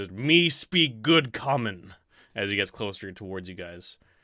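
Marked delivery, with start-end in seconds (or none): 0.1-1.9 loud, slow, big booming ape voice. Narrating an ape coming towards the group, speaking in a big booming ape voice. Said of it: "A big booming voice comes from the ape".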